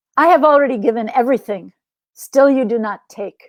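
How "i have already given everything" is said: plain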